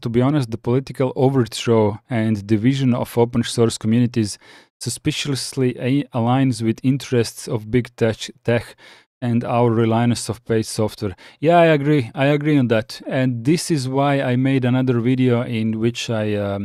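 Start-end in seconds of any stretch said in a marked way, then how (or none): none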